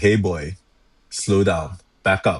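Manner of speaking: slow, strong, stern, commanding voice. Demonstrating how they speak to animals, in a slow, strong stern voice. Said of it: "with a strong, stern voice".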